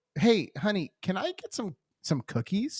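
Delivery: courteous, nice voice. Retelling asking for cookies while paying for groceries: imitating own polite request. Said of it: "I just being polite, I go".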